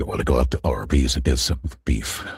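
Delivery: deep voice-changer voice. Showing a voice changer's free voices: voice changer deep male voice. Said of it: "Kinda sounds like that".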